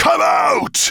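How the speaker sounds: very high, roaring, bellowing voice. A creature thrusting its horns at the empty air, bellowing. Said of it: "He bellowed".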